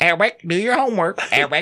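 put-on high, calling-out old lady voice.

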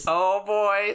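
cartoon cow voice. Doing a favorite impression from the episode: impression of the cow. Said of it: "Mine's also the cow".

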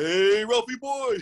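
very high, loud calling voice. Talking about doing voices, showing off a favorite, Ed Norton impression. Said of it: "I do a great Ed Norton".

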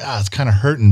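ordinary delivery

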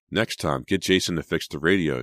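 plain

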